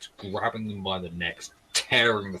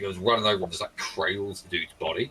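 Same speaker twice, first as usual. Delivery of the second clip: ordinary talk, nothing marked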